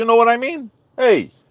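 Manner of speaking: exaggerated Italian accent with swooping pitch. A former radio host shows how they talked on their show; exaggerated italian accent. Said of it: "and I talked like this".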